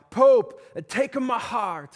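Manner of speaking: emotional, loud, high cry in put-on Italian accent. Telling of a crowd at the Vatican crying out, Italian accent. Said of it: "that's the best Italian accent I've got".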